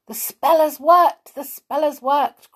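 very high, loud, excited cry. Peter, jumping about as the wizard falls asleep, cries out in excitement. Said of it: "cried Peter, jumping about in excitement".

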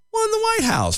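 voice suddenly leaps up to very high pitch. Reading a news passage aloud to others: voice jumping very high. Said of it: "Your voice went like five octaves higher".

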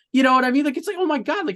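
high, giddy, gushing, overwhelmed with excitement.

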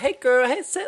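very high, loud, flamboyant camp voice. Showing a manner that was never their own: camp voice. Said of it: "a camp, like".

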